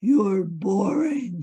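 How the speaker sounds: loud, booming voice of doom. Explaining the inner critic Nigel, the speaker gives Nigel's booming voice of doom. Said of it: "a booming voice of doom".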